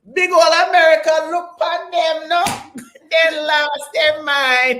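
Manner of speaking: put-on Jamaican accent, very high and loud. Speaker imitates cousins in Jamaica, in a put-on Jamaican accent. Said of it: "I'm gonna do it with my Jamaican accent".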